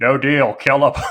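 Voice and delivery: mock dead-level deadpan, flat monotone. Quoting a peasant extra's line from a show's pilot, imitating a monotone deadpan delivery. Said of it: "in the most monotone, deadpan delivery".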